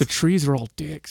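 put-on whisper. Retelling what a son whispered in the speaker's ear: imitating a whisper. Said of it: "and he whispers in my ear".

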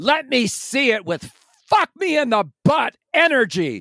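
very high scream at full lung power. Retelling a man's shout to backup dancers on a sound stage: imitating someone shouting at full volume. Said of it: "at the top of his lungs, he says".

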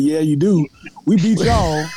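acted-out, drawn-out, very slow, condescending drawl. Retelling the other speaker's reply to complain about it: imitating a condescending tone. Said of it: "I ain't like your tone when you said".

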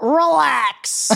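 drawn-out creaky high word. Offering and doing a quick impression of a comedian: Todd Glass impression. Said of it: "Do you wanna hear my Todd Glass impression?".

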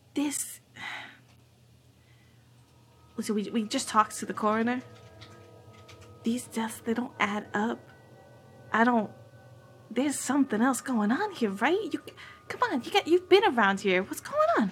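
hushed, confiding, conspiratorial lean-in tone. Playing a character leaning in to a local: conspiratorial, leaning in. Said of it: "lean in a little bit conspiratorially".

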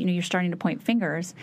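ordinary delivery

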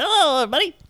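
squeaky, very high helium voice. Answering a request to show how you'd sound on helium: mock helium voice. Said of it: "I just wanna know what you would sound like on helium".

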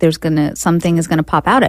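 ordinary talk

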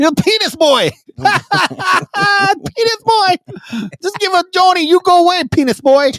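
very high, squeaky helium-like voice. Imagining how people would talk to someone named Chachi, in a squeaky helium-like voice. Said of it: "You sound like Mike Tyson on helium".

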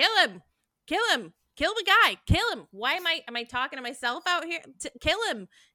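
casual, matter-of-fact tone. Retelling a movie villain's lines: casual Rip Torn impression. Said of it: "he just says it so casually, so matter-of-factly".

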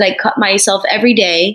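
plain

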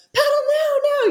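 very high, urgent, put-on shouted yell. Retelling yelling at their daughter, who sat in front, retelling a yell. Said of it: "I'm just yelling at her like".

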